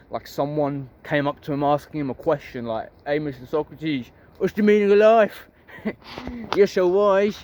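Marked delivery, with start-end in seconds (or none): 3.0-7.4 put-on London Cockney accent. Retelling someone coming up to Socrates with a question: Cockney accent. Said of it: "I don't know why I'm using the accent. I don't think they spoke in a Cockney accent".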